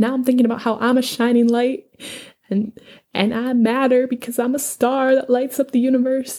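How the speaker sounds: high, teary, tearful voice on the edge of crying. Reacting to a speech from a story, sounding teary. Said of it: "I sound like I'm crying, but I'm not".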